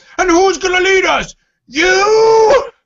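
very high slow yell, "you" dragged out. Doing an impression of RoboCop yelling at Kirk: RoboCop voice, yelling. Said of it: "that's my impression of RoboCop yelling at Kirk".

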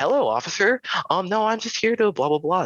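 fake voice pitched way up, swooping. Retelling speaking to an officer to make him comfortable, in a put-on whitest voice. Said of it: "my whitest voice ever".

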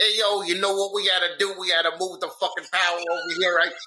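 put-on New York working-man accent. Retelling what a New York utility worker said on TV: New York accent impression. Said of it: "a New York Con Ed guy got on the TV. And he was like".

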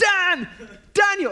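very high, far-carrying shout. Retelling a man who stands up and calls to a stranger: imitating someone shouting a name. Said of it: "he stands up and he shouts".

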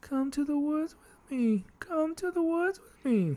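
very high, eerie, hushed haunting voice, cracking. Inviting listeners to come camping in the woods; little haunting voice. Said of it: "Let me do it in a little like haunting voice".

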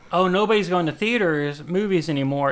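ordinary talk

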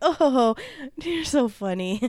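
mock drawn-out, very slow, half-laughing dismissive tone. Retelling an assistant answering a man during a job interview, imitating someone half-laughing. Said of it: "kind of laughing".

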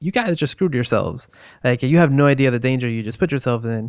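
ordinary delivery

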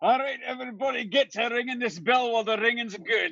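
quick, high shouting.

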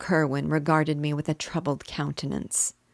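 ordinary delivery

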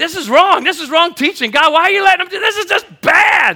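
very high-pitched, shrill, loud yelling. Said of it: "I'm yelling at the TV".

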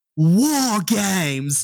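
put-on loud shout in a British accent. Voicing a wrestling figure announcing the next match: shouting in a british accent. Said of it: "says at the top of his lungs in his British accent".

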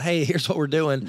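ordinary delivery

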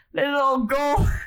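odd stage-Irish accent, very high pitched. Speaker repeats a phrase that just came out oddly, in a weird accent. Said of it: "That sounded like a weird accent".

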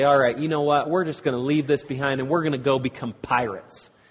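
ordinary delivery

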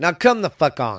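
heated, riled-up, worked-up outburst. Speaker apologizes for getting worked up in the middle of a rant: worked up. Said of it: "I'm sorry if I'm getting worked up".

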